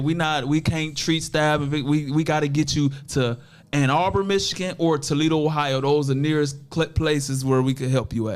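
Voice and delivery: plain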